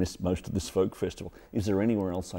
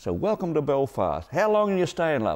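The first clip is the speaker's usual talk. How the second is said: odd, small, high, dwarfish gnome-like voice; 7 semitones higher, 4 dB louder than usual. Retelling a woman in Belfast greeting a traveller: strange little gnomey voice. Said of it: "such a strange little dwarfy, gnomey kind of voice".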